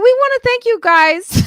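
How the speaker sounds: voice jumping high. Speaker thanking the listeners, voice going up. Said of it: "I don't know why my voice went up".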